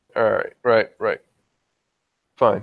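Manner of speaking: irritated, annoyed, grudging tone. Voicing a character who shakes her head and gives in: annoyed. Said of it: "She appears quite, mm, annoyed".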